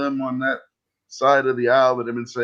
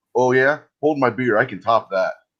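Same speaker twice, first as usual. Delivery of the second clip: ordinary delivery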